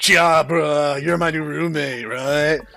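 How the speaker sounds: slow, drawled dudebro voice. Reading a visual novel, voicing the roommate as imagined: dudebro voice. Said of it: "you know the voice I'm hearing in my head?".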